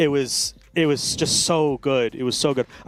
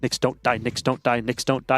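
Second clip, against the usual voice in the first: ordinary talk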